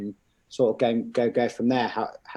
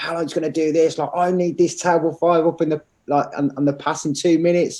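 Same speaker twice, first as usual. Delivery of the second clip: mock screaming, higher pitch and louder; 6 semitones higher, 5 dB louder than usual. Retelling a head chef screaming at staff: imitating a screaming head chef. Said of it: "here screaming at me".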